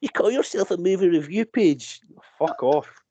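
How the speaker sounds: put-on smarmy Edinburgh accent. Venting about smarmy online commenters, the speaker does a mock commenter, Edinburgh accent. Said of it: "your complaint comment voice ... sounds like you're from Edinburgh".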